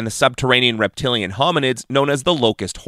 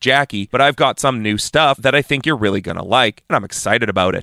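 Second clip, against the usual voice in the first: ordinary delivery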